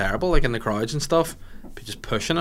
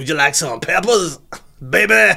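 put-on American accent, higher and louder; 5 semitones higher, 7 dB louder than usual. Reflecting on an impression of a teacher, the speaker repeats it in a put-on American voice. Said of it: "I was doing this voice".

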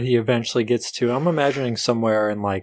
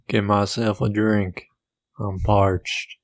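put-on cowboy drawl; 3 semitones lower than usual. Voicing a character arriving in town: Sam Elliott voice. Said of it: "you just did the Sam Elliott voice".

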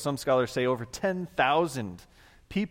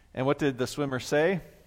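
ordinary talk, nothing marked

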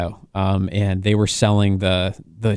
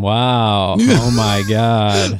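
mock-sarcastic, put-on sarcastic tone; 3 dB louder than usual. Speaker retells a man's reaction after he came out briefly, mimicking his sarcasm. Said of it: "he was like sarcastic the whole time".

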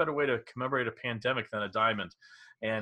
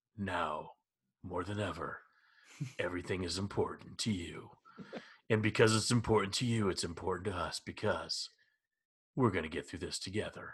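low, soft TV commercial announcer voice; 5 semitones lower, 7 dB quieter than usual. Recalling commercials seen while watching TV with family, TV commercial announcer voice. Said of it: "Your announcer voice".

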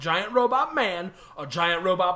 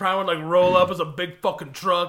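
plain

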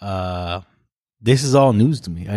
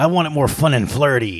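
creepy put-on voice, pitched up; 5 semitones higher than usual. Imitating someone describing their vision, in a creepy voice. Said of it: "You say that creepy voice".

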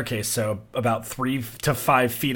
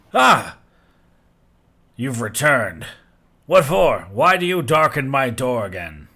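put-on drunk giant voice, louder; 6 dB louder than usual. Game narrator voicing a drunk giant greeting the returning party, drunk giant voice. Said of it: "the giant is drunk".

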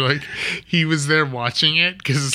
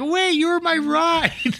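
put-on girl voice, much higher, slower; 14 semitones higher than usual. Acting out a scene, the speaker voices the woman in a girl voice. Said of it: "I like your girl voice".

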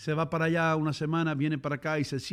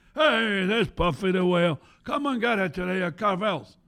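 put-on old TV commercial spokesman, pitchman announcer delivery; 4 semitones higher, 4 dB louder than usual. Recalling an old Carvel TV commercial: Carvel commercial voice. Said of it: "that's a good imitation".

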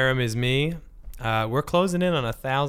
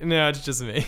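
normal talking voice

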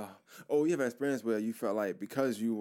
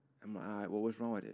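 normal talking voice

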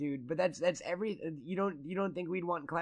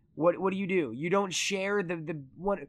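usual speaking voice

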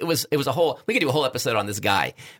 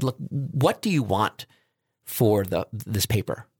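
put-on exasperated tone. Retelling asking a professor about a paper: retelling an exasperated question. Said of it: "I was in kind of an exasperated state".

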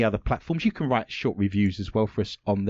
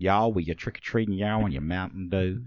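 fake American accent, much lower pitch; 5 semitones lower than usual. Told to develop a great fake american accent, trying it out: fake american accent. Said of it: "You need to develop a great fake American accent".

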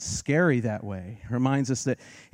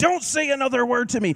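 mock yelling, higher; 13 semitones higher, 3 dB louder than usual. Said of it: "remember what the woman was yelling?".

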